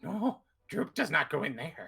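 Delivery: little goblin character voice. Narrator voicing the goblin Droop as he turns around; Droop goblin voice. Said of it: "Droop turns around and goes".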